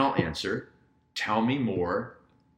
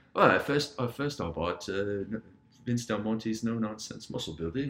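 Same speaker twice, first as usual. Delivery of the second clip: put-on British accent held throughout. Retelling a man's true answer, in a british accent. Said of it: "In a British accent".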